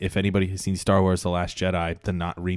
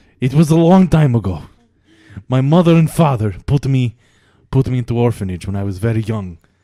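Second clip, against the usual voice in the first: fake Russian accent, higher and louder; 5 semitones higher, 11 dB louder than usual. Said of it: "what's with this accent?".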